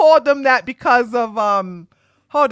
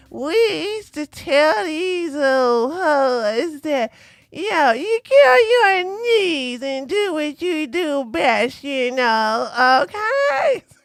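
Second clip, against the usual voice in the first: exaggerated old woman voice with know drawn out; 4 semitones higher than usual. While reviewing a video, mock a panel guest nicknamed Grandma: Rollo Tomassi as an old woman. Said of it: "You gotta say it like an old woman".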